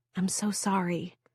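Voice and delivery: soft, hushed, barely audible half-whisper. Narrator reading a woman's line to a tired, sad man as she takes his hand, half-whispering. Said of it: "she whispers".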